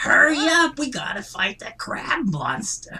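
very high, swooping, slow, stretched-out voice. Voicing a comic book character as if read aloud: Gilbert Gottfried voice. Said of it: "I assign Gilbert Gottfried to".

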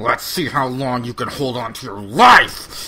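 slow, loud, defiant bear voice.

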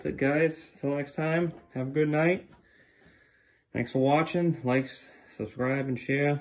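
breathless and panting. Signing off a video to viewers, out of breath. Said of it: "I'm out of breath".

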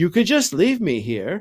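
hopeful tone. Harry puts in a suggestion while Aunt Petunia talks about him, hopeful. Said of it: "Harry put in hopefully".

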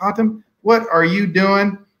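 put-on Southern American drawl, words stretched. Retelling a story about checking the brisket, imitating Carter's Southern drawl. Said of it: "This is my Southern drawl".

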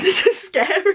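high, laughing exclamation.

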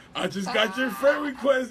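high, slow yell from a distance.

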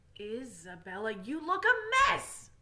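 loud, slow, drawn-out, swooping groan. A narrator reads a father speaking to his daughter, groaning. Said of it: "he groaned".

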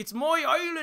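put-on Irish accent, pitched very high. Imitating an actor playing Alexander: imitating Colin Farrell's Irish accent. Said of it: "he's got this Irish accent".

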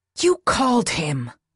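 drop into a voiced stage whisper. Narrating a novel, Kris speaks to Jack as the commander arrives, half-whispered. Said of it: "Kris whispered".

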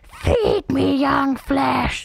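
gurgling creature voice. Narrator voices a bog monster speaking into the listener's mind, gurgling voice. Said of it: "A gurgling voice erupts in your mind".

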